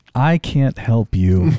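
put-on flat deadpan delivery. Retelling own answer to a passenger's request: imitating own deadpan reply.

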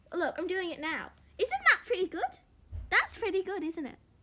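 very loud, high-pitched put-on English accent. Showing the other speaker an attempt at an english accent: put-on english accent. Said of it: "my English accent is pretty good".

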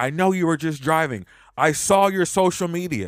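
man's loud hollered shout. Retelling a man outside the house yelling through the gates: imitating a man yelling. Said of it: "And he's yelling".

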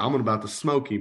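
ordinary delivery

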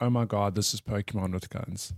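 normal talking voice

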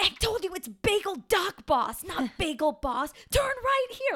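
shrill, very high screaming. Describing two people fighting in the car, imitating them screaming at each other. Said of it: "Like screaming at each other in the car".

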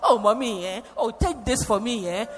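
generous, urging auntie voice. Retelling how Auntie Maggie offered gifts: Auntie Maggie's way of talking. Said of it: "you know the way she talks".

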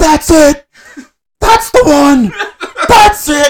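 very high, shrill, shrieked screaming. Retelling someone standing up at a big slot bonus: imitating Brock screaming. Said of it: "starts screaming".

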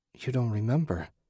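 hushed voice. Reading a story aloud, a wife answering her husband: whispering. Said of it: "she whispered".

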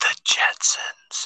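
hushed whisper, barely voiced. Naming a show the other speaker nervously asked to hear whispered: whispering. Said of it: "Whisper it".

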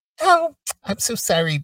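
put-on swooping, condescending, patronizing baby talk voice. Mocking a woman's condescending habit, speaker imitates her in a mocking baby voice. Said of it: "She throws that baby voice in".

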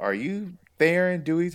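put-on very high-pitched scream. Retelling how a stranger yelled at them by the car, imitating a lady screaming. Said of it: "this lady just starts screaming at me".

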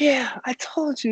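high, drawn-out screaming yell. Retelling a man in the crowd shouting toward dad: imitating someone screaming. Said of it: "He's, like, screaming and yelling".

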